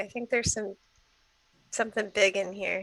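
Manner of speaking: quiet, quick murmur under the breath. After hearing skittering from inside, a player tells the group something, speaking quietly. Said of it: "I'll say quietly".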